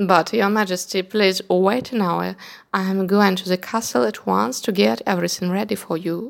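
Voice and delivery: ordinary delivery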